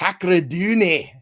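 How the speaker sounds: put-on Irish accent. Reading out a listener's last name in an Irish accent. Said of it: "what was that, an Irish accent?".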